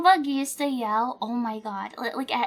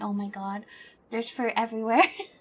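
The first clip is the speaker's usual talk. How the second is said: mock laughing speech, lower and quieter; 3 semitones lower, 5 dB quieter than usual. Describing a recording of a vet trip, the speaker imitates grandma's laughing speech. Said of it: "my grandma laughing and going".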